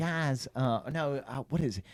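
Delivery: slow, soft, drawn-out, wide-eyed, sweet voice. Mocking an athlete's way of talking: effeminate gee-whiz Tim Tebow voice. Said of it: "he's always like".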